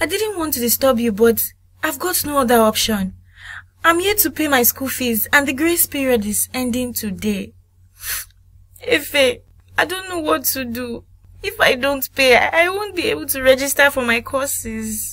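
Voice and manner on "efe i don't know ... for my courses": tearful, crying through the words. A student asking someone for help paying fees, crying while talking. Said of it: "Stop crying now".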